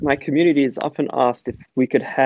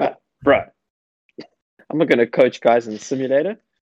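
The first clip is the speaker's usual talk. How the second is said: laughing, scoffing, dismissive tone in a fed-up voice. Retelling how a coach might have refused the offer: Nick impression. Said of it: "That was a pretty good Nick impression".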